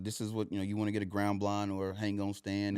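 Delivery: ordinary talk, nothing marked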